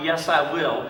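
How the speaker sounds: ordinary talk, nothing marked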